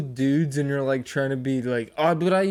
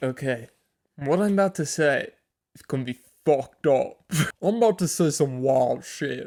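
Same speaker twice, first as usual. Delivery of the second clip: clumsy, bad, put-on English accent. The speaker mocks a man's words, quoting him in a bad English accent. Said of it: "my English accent is just me swallowing my tongue".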